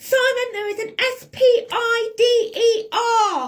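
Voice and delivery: mock, very slow, loud, high, drawn-out shout. Retelling being stuck in a bathroom with a spider: retelling a shout down the stairs. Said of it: "so I shout down the stairs".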